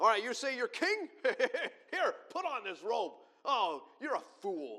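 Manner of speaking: very loud, slow, drawn-out scornful taunting. Retelling how they put a robe on the man, acting out mocking jeers. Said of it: "Mocking him".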